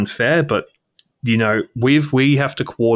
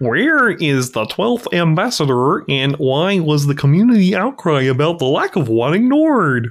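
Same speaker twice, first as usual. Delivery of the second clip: higher pitch, stretched out; 6 semitones higher than usual. Reading out a question in a Kermit the Frog voice. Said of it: "that's a pretty good Kermit the Frog".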